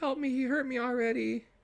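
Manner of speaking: put-on tiny girl's high-pitched voice. Retelling how the leprechaun tricks the cops with a voice, in a little girl voice. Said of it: "it makes it like a little girl".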